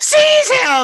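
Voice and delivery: shrill, very high, loud yell. Voicing Meepo as he whirls around and orders capture: Meepo yelling. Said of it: "and yells".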